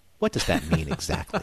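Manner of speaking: low, bone-dry deadpan voice. Recounting a TV scene where one character questions another, deadpan. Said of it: "so deadpan".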